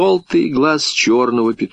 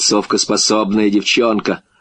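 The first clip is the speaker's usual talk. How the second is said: ordinary delivery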